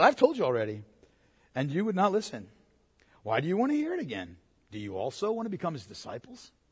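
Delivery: very quiet, hushed, swooping sing-song sarcasm. Speaker acting out a man's reply to those questioning him, mock-sarcastic. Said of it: "and this is where the sarcasm goes".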